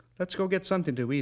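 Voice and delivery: high, hurried, urgent begging tone. The narrator, wanting food instead of whiskey, asks Jack to go eat, pleading. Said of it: "I pleaded".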